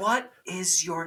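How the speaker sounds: mock whispering. Retelling asking a musician his name on stage: retelling a whisper. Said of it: "I'm trying to whisper".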